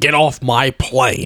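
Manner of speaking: very slow, deliberate delivery, every word drawn out. Doing an impression of Harrison Ford in Air Force One: Harrison Ford impression. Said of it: "can I do my impression of Harrison Ford in that movie?".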